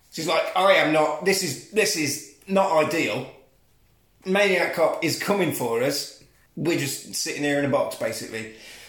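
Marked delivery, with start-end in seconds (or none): none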